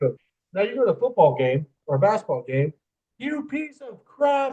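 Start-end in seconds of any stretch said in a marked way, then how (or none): 3.2-4.5 very high, very slow, shrill, drawn-out screaming yell. Retelling what people at a football game scream at an official: imitating fans screaming. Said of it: "they're screaming at him".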